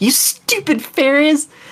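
high-pitched, furious, angry outburst. Voicing a character in the game, in her own words: angry. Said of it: "she's so angry about it".

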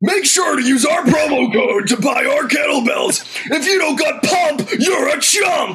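high, widely swooping put-on voice. Mock promo read, urging listeners to buy kettlebells: Alex Jones voice. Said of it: "That was a wicked good Alex Jones voice".

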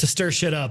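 flat put-on deadpan. Retelling a woman's answer when asked why, imitating her deadpan reply.

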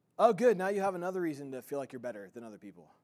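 ordinary talk, nothing marked

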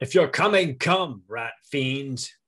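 loud in-character shouted yell. Calling out in character to an unseen rat fiend: yelling. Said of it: "I yell out".

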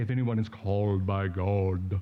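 deliberate, slow, low voice. Joking about a verse Paul doesn't say: lowered God voice. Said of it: "A little better lowered God voice".

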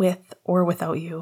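plain

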